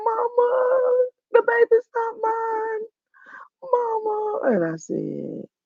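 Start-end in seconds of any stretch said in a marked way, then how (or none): 0.0-4.4 very high, very slow sobbing, "mama" stretched. Retelling a son's phone call about the baby: imitating a crying son. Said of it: "he called me and he was crying".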